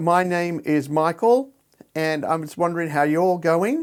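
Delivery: upward lilt, rising pitch on final going. Mimicking speakers who end every sentence with upward pitch at sentence end. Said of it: "they put a, an upward pitch at the end of every sentence".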